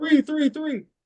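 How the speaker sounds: high-pitched, loud yell. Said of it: "But I was just yelling".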